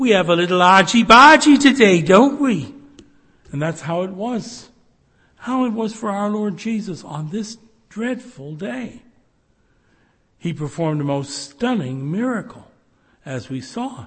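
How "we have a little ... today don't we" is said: put-on very loud Scouse Liverpool accent. Speaker quoting a friend of theirs from Liverpool: Merseyside accent. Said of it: "in her Merseyside accent".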